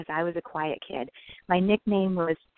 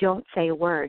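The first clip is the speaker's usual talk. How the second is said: acted stern voice, slower. Retelling the grandmother's words to her as a child in the tub, retelling a stern order. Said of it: "she sternly said to me".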